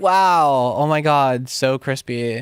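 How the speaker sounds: drawn-out, over-the-top, slow, heavy sarcastic gushing awe. Reacting to the mix sounding crisper after an EQ: heavy put-on sarcasm. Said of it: "I say that with so much sarcasm".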